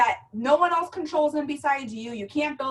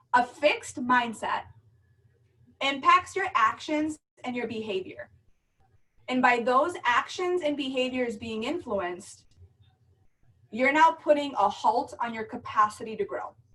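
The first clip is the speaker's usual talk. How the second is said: slow, deliberate, carefully measured delivery, word by word. Speaker to a group, saying a point so it sinks in, speaking slowly. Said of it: "I'm going to say this slow".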